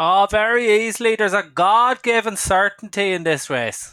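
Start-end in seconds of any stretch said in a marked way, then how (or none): 1.1-3.9 put-on Wexford accent, higher and louder. Naming the certain winner of this race: Jamie Codd accent impression. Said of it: "that accent is spot on".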